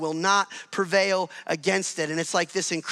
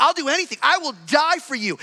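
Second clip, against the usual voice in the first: mock, loud, high, chest-puffing boastful bravado; 9 semitones higher, 5 dB louder than usual. Retelling a disciple's bold promise to die for Jesus: imitating chest-puffing bravado. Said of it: "a dude puffing out his chest".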